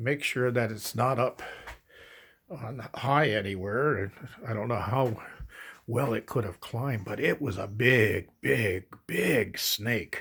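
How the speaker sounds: quiet hush.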